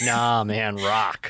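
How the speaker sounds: annoyed, dismissive, really mad insistent tone. Retelling a street interview bit, imitating Kyle Mooney getting mad. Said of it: "he would get really mad when people said rap".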